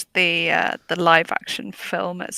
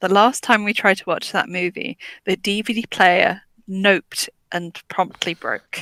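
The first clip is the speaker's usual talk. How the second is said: normal talking voice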